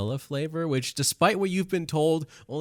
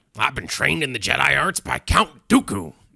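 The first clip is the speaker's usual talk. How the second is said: put-on villain character voice; 4 dB louder than usual. Speaker shows off an impression during Star Wars chat: General Grievous impression. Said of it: "That was my General Grievous impression".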